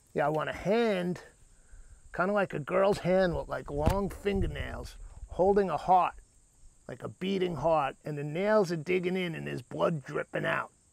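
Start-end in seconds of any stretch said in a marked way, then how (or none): none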